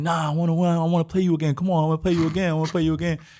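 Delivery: acted crying, angry, whiny child voice, high, loud. Retelling begging his father for another game as a kid: imitating own childhood tantrum. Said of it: "I'm crying, getting all mad, like, throwing a tantrum".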